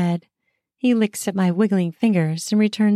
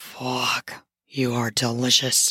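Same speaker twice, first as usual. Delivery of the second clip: rough, scratchy, hoarse, raspy voice; 8 semitones lower, 5 dB quieter than usual. Voicing a character's line in a story read aloud: raspy voice. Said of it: "in a raspy voice".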